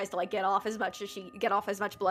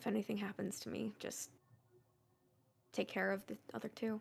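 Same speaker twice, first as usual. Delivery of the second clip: very quiet, hushed, private aside; 10 dB quieter than usual. Cedar, walking beside Leah, speaks in a voice only Leah can hear. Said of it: "in a voice that only Leah can hear".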